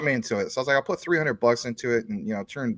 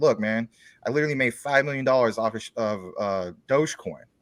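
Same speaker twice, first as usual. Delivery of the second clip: ordinary talk, nothing marked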